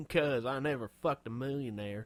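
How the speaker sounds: put-on Southern accent. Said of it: "when did she get the Southern accent".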